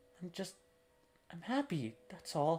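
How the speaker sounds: tearful, crying while speaking. Answering a sibling who asks why they are crying: crying while talking. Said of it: "why are you crying?".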